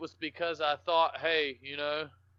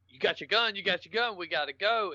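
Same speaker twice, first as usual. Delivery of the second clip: mock panicked, acted-out voice; 3 semitones higher than usual. Retelling how their Army Ranger dad urged them to go, imitating panicked dad. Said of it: "and he's panicking".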